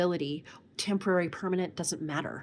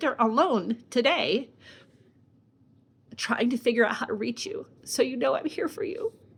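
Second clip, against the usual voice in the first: tearful, high crying voice, speaking through tears; 6 semitones higher, 5 dB louder than usual. Speaker talks to listeners while trying to stop crying: crying while speaking. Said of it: "I'm going to stop freaking crying".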